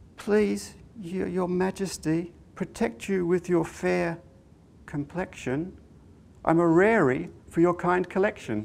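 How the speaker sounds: very timid, high, stammering, pleading voice. Reading a story, a fairy answers the king at his door; timid stammer. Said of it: "very, very timidly, she stammered".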